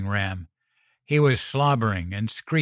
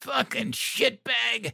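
strangled, choked-out, rasping, rough, very high-pitched; 12 semitones higher, 4 dB quieter than usual. Sprayed in the face with bleach at the doorway, a man chokes out the words. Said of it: "He choked out".

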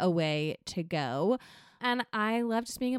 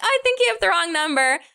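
very loud, high, bubbly voice; 8 semitones higher, 10 dB louder than usual. Retelling a woman telling a caller he has the wrong number, imitating a bubbly woman. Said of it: "I think she's so like bubbly".

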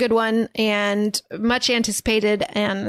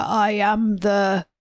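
slow, spooky, put-on voice. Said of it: "He does a spooky voice at the end".

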